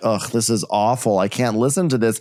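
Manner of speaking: normal talking voice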